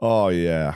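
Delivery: put-on Canadian bro accent in a DJ announcer style. Retelling a night out, imitating a canadian strip club dj. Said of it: "Occasionally you just hear him like".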